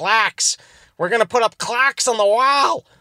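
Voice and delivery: failed, botched, accidental put-on Boston accent. Mid-rant, the speaker accidentally slips into a failed Boston accent. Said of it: "I just turned into a bot".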